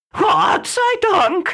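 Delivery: very high, screeching, shrieking bird cry. A bird that just escaped a cat flutters to safety, shrieking. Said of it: "kreischte Mario".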